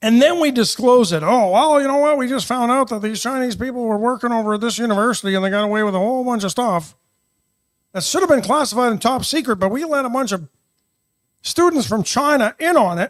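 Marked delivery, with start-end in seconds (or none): 1.2-13.1 put-on 1960s old-time radio newscaster announcer voice. Doing a mock news bulletin in a 1960s radio newscaster voice. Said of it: "That's my like nineteen sixties radio newscaster voice".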